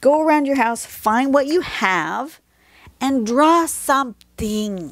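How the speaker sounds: high, emphatic, insistent urging tone. Urging the viewers to go and draw something, yelling at them. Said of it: "Yes, I'm yelling at you".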